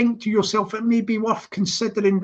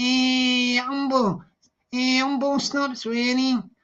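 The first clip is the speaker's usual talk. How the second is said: slow put-on Liverpool Scouse accent, "hey" drawn out; 4 semitones higher than usual. Retelling what a man kept saying, in a put-on scouse accent. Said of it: "That sounds Scouse".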